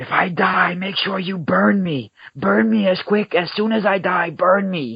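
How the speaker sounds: desperate, frantic, very high scream. Retelling a dream of a man on his deathbed: imitating someone screaming. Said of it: "screaming at the top of his lungs".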